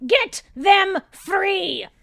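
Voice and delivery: high, loud, slow, shrill yelling. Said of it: "I don't like it when she yells at me".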